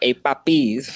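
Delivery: put-on New York accent.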